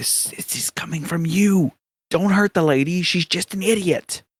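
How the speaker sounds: hushed whisper. A game narrator voicing characters telling Boo to calm down, whispering. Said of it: "they're gonna whisper".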